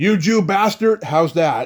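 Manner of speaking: shrill, loud, hollered yell. Retelling an answer to a director's question: imitating someone yelling. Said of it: "And he yells".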